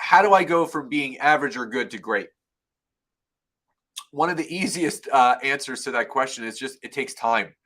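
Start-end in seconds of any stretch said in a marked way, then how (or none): none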